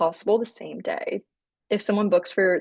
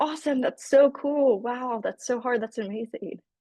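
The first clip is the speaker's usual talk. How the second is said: exaggerated, overacted, over-the-top gushing enthusiasm; 4 semitones higher than usual. Coaching on how to answer a caller, showing what not to do: overacted, overly eager. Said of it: "don't overact with".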